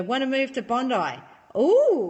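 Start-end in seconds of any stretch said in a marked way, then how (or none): none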